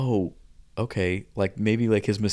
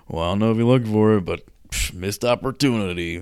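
put-on condescending, patronizing, talking-down tone; 3 dB louder than usual. Imitating Jeff talking to the camera: condescending Jeff impression. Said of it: "really condescending about it too".

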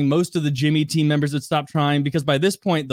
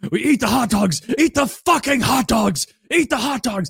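play-acted, high-pitched, all-out repeated screaming; 8 semitones higher than usual. Retelling a team challenge, the speaker acts out Jimmy screaming. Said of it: "Jimmy's screaming like".

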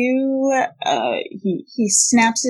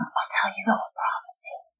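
breathy, hushed whisper; 7 dB quieter than usual. A man held up by the collar whispers to his captor: whispering. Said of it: "he whispers to you".

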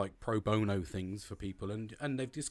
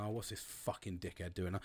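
muttered under breath, much quieter; 2 semitones lower, 7 dB quieter than usual. Retelling seeing people on the path while walking the dog: muttering under breath. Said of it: "I'm under my breath going".

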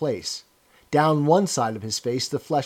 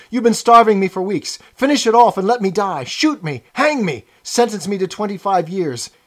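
desperate, pleading, high-pitched, loud all-out yell; 6 semitones higher, 7 dB louder than usual. Narrating a prisoner's plea to the officer, yelling. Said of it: ""You don't have to take me to that place. Haven't I told you everything already? What else is it you want to know? There's nothing I wouldn't confess. Nothing. Just tell me what it is, and I'll confess straight off".

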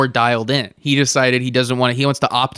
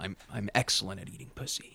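mock refined manner, lower and quieter; 5 semitones lower, 18 dB quieter than usual. Imitating how someone would boast in his cultured man way: imitating a cultured man. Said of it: "in his cultured man way".

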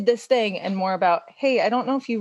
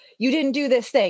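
fast, accusing, blaming tone; 4 semitones higher than usual. Describing the old script of arguments with him, the speaker acts out their accusatory tone. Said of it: "my voice is already accusatory".

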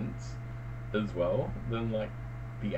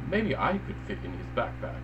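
normal talking voice

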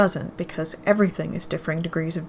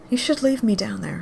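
mild, gentle-toned delivery; 3 semitones higher than usual. She speaks to the one who brought her up here from down there, softly. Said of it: "she says softly".

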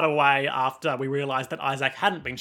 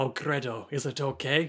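slow, drawn-out put-on European accent; 5 dB quieter than usual. Retelling what a character in the show says: imitating a european accent. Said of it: "he says in his authentic European accent".

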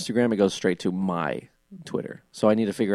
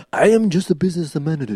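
exaggerated caricature Japanese accent, man's voice, much higher; 8 semitones higher, 5 dB louder than usual. Joking around with the others, voicing a businessman, racist japanese man voice. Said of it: "To the horrible racist Japanese man".

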